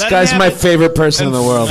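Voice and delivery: ordinary delivery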